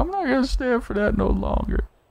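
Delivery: very high-pitched, weepy sobbing voice. Mocking what another speaker just said, imitating someone crying. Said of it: "you said like you crying".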